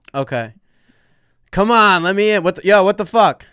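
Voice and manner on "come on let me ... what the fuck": put-on little yell, louder. Acting out a driver trying to get let in, retelling a little yell. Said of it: "little yell".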